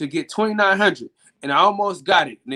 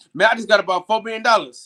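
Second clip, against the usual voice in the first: ordinary talk, nothing marked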